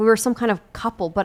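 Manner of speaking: ordinary delivery, nothing marked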